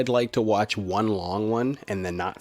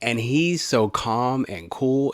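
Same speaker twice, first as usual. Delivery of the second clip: ordinary talk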